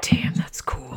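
hushed, whispered mutter under the breath. In a roleplay game, Beck reacts to another character's spell, muttering under her breath. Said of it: "Beck says under her breath".

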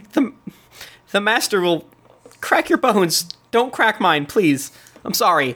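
high-pitched, frightened, pleading creature voice. Voicing a cornered creature backing away from a growling player: frightened pleading creature. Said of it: "she is definitely afraid of you".

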